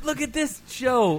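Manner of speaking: high, slow, excited gushing.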